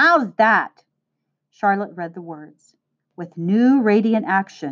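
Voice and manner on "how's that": triumphant, victorious tone. Returning with a strip of cardboard, he shows it to Charlotte, triumphant. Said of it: "he said triumphantly".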